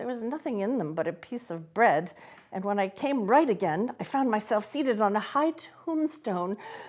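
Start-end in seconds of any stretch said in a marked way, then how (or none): none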